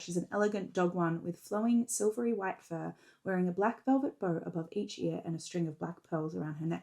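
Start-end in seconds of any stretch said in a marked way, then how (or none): none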